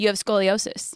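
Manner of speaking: ordinary delivery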